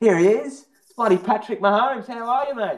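put-on very high yelling. Retelling how a man in the marketplace called out: imitating a man yelling out. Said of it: "this bloke yells out to me".

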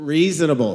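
sarcastic tone and inflection. Reading a scripture word aloud to show its original inflection: sarcastic inflection. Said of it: "it's sarcastic".

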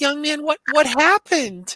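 put-on very high, loud, slow sweet old-lady voice. Retelling a story, quoting an 85-year-old woman, imitating a sweet elderly woman. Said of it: "this sweet little low 85-year-old woman goes".

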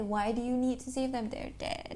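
plain

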